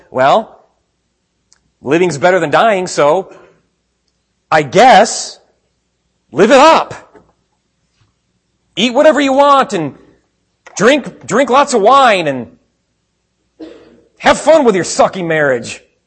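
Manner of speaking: high, loud, mocking sarcastic voice.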